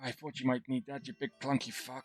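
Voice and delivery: very quiet, hushed half-whisper. In a game scene, a character half-whispering in another character's ear. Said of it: "he sort of whispers in his ear".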